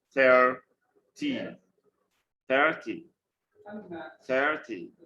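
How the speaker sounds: THIRty, first syllable stressed, falling ending. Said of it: "always stress the first syllable".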